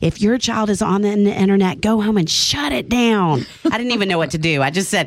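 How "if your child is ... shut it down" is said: mock, toned-down, mild fatherly yell.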